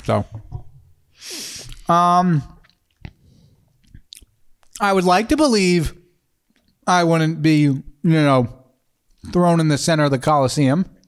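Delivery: speaking with mouth full of food, chewing. Eating a donut, the speaker answers the other speaker while talking while chewing. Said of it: "I apologize for eating in your ear".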